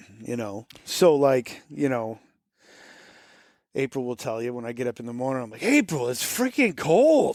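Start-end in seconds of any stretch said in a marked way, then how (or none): 5.6-7.4 put-on, sing-song Boston accent. Retelling own words to April on a cold morning: Boston accent. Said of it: "you can hear the Boston when you said that".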